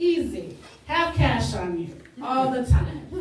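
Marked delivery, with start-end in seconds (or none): none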